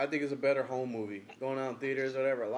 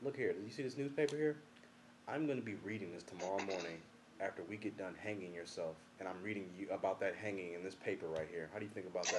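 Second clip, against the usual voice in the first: mock calm speech, much quieter, lower; 6 semitones lower, 10 dB quieter than usual. Retelling what a man said to someone refusing to give information, imitating him speaking calmly. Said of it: "He said it so calmly".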